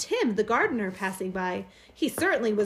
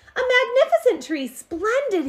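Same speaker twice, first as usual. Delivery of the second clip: very high, loud, excited cry; 10 semitones higher, 5 dB louder than usual. Reading a story, he opens the door to the delivered tree: crying out. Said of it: "he cried".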